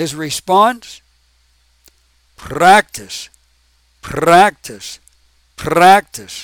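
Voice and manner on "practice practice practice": put-on Russian accent. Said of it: "That's supposed to be the the Russian accent".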